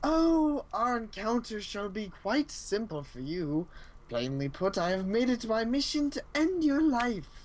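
cheerful, pleased villain voice with swooping pitch. Player voicing a game character's line, sounding happy. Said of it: "He's so happy about it".

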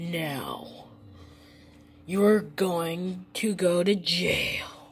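very low, deep, dark, slow, menacing voice. In a skit telling kids to be safe on the internet: deep, dark, menacing voice. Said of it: "where's your deep, dark, and menacing voice".

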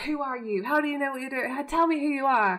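high, heated, play-acted shouting. Recounting a man's shouting match with a doctor, retelling his shout. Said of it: "Dean's shouting like".

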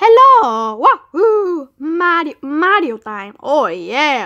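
very slow, drawn-out, loud cartoon game-character cheer. Voicing a Mario plush toy while showing it: Luigi voice. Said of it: "that's Luigi's voice".

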